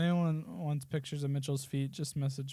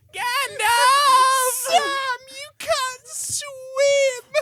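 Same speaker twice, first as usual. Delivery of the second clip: whiny put-on actor voice, higher and louder; 12 dB louder than usual. Mocking an actor's delivery of the farewell scene: whiny bitchy Elijah Wood imitation. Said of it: "Elijah Wood's so bitchy and whiny".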